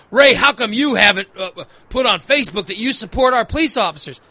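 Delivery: plain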